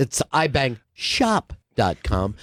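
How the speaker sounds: slow, deliberate, pointed setting-straight tone. Retelling how another speaker corrected a joke: imitating someone correcting. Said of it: "he's like".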